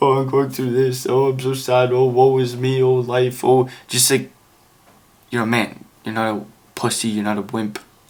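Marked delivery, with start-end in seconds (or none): 0.0-3.7 whiny, woe-is-me, self-pitying complaining. Mocking the wrong way to share feelings: mock whiny self-pity. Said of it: "a bitchy kind of way".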